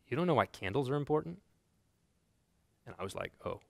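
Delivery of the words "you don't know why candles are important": put-on, dry, matter-of-fact, dead straight delivery. Quoting the pastor's answer back to the speaker, retelling a deadpan reply. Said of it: "Pastor Sam looked back deadpan and goes".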